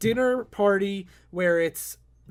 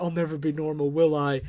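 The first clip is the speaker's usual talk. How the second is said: mock tearful superhero voice, lower; 5 semitones lower than usual. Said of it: "Batman's crying".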